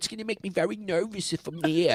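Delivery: character voice with Manhattan sound. Retelling a cartoon episode, imitating the cousin: Woody Allen voice. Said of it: "He talks kinda like Woody Allen".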